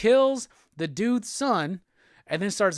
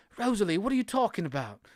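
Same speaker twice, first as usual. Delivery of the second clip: fast, sudden, put-on British accent. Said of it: "Why did he get British all of a sudden?".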